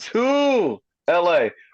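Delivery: hard emphasis on the word "to". Sports talk about a team heading to la, emphasis on to. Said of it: "Why do I put the emphasis on the two?".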